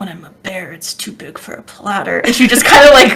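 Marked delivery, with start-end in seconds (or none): 0.0-2.2 whispered, low, soft mutter under the breath. Voicing a character who mutters a retort: whispering under her breath. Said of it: "whispers it under her, her breath".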